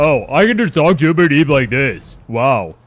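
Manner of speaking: put-on cool voice. Finding he can talk to Uber Eats by voice, in a put-on cool voice. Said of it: "Isn't this such a cool voice".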